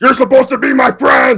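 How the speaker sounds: over-exaggerated, very high screaming, way over the top. Quoting a wrestler's catchphrase, not in normal voice: Batista's over-exaggerated screaming voice. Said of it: "You use Batista's over-exaggerated screaming voice".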